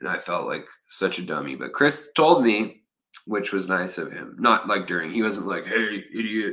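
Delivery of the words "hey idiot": imitated big manly voice. Retelling how Chris did not react, imitating Chris's big manly voice. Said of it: "He's got a big manly voice like that".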